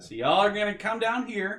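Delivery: shrill, very loud, very high calling-out voice. After killing their leader, calling out to the cultists, very loud voice. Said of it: "Let me make my voice real loud".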